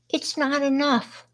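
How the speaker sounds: put-on very childish, meek little voice, high and soft. Retelling what a trick-or-treater said to the speaker's mother, imitating a childish, meek voice. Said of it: "in a very childish, meek voice".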